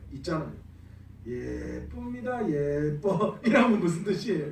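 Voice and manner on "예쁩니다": sarcastic, snide, insincere 예쁩니다, pronunciation twisted. Showing how intonation changes a word's meaning, sarcastic, twisted tone on 예쁩니다. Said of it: "이거는 진짜 예쁘다는 말이 아니라 좀 빼딱하게 꼬아서 이야기하는 거죠".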